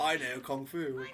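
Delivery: slow delivery with every word drawn out. Mocking how actors in movies say lines: Keanu Reeves impression. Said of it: "has to say it like that".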